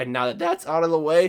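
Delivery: voice breaking and cracking mid-phrase. Host wrapping up a merch plug before the topics, voice cracking. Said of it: "there's the first voice crack".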